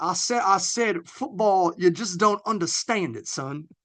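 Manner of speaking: heavy, laid-on Southern American accent. Speaker shows off their good accent: Benoit Blanc Southern accent. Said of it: "my good southern accent, right?".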